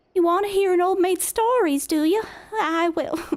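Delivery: put-on Southern belle accent, very high, loud. Trying out a southern belle accent for a character in the game. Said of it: "You can't say I in a Southern accent".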